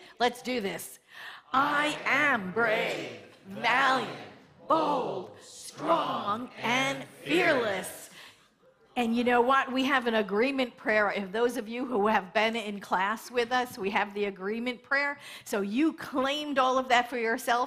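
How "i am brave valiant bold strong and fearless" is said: very slow, powerful, passionate tone. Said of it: "Let's say them in power and in, in passion".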